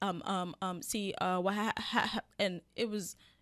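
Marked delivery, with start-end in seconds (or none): 0.8-2.2 put-on nervous, choked-up stuttering stammer. Retelling a friend's phone call, imitating him choking up: imitating someone stuttering nervously. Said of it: "when I said Buddy choked up, he was doing".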